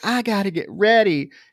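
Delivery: mock flirtatious voice. Retelling a movie scene where she answers him: imitating a flirty tone. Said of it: "she's trying to be flirty".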